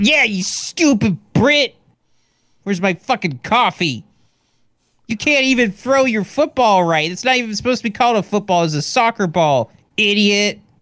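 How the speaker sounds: very high, nasty, mean yelling rant. Acting out a mean American yelling at British people: mean American yelling. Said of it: "a mean American goes to Britain and just yells".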